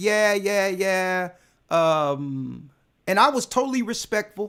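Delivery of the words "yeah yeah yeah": mock offhand, waving-away, dismissive brush-off tone. Retelling a phone call, the speaker imitates a dismissive man: mock-dismissive. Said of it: "he started talking dismissive".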